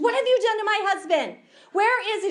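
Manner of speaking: put-on panicked, tearful, high, loud, frantic outburst. Retelling a wife who cannot find her husband: imitating someone freaking out and crying. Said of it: "She starts freaking out and crying".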